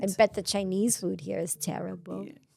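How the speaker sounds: put-on soft little old grandma voice. Taking a turn at an impression, the speaker sounds like a grandma. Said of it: "you sound like a grandma".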